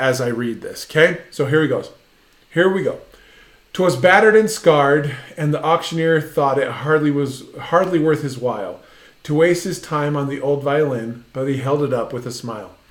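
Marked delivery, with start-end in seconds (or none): none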